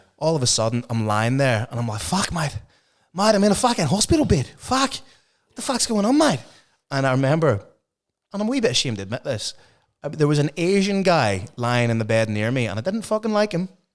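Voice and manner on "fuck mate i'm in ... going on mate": put-on Australian accent, very high-pitched. The speaker acts out a past moment when they spoke as an Australian, Australian accent. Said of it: "at one stage I was Australian".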